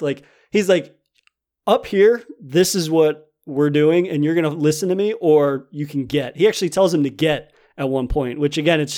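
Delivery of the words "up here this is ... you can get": ordinary delivery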